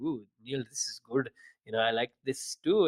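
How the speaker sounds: overdone, thickly exaggerated Indian accent. Retelling what the parents say about the coffee: exaggerated Indian accent. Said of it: "I hypercreate an Indian accent".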